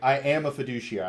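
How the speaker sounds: bold, confident, forward delivery. Showing how the line should have been said to a stranger: saying it boldly. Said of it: "I wish I would have said that more boldly".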